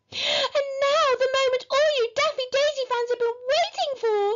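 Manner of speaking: shrill, very high-pitched squeal. Narrator reading a story voices Daffy announcing to her fans on stage, squealed. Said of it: "squealed Daffy".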